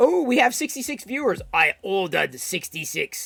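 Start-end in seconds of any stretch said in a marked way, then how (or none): 1.5-3.3 put-on sinister emperor voice. Doing an impression after noticing sixty-six viewers: Palpatine voice. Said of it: "that's my Palpatine impression".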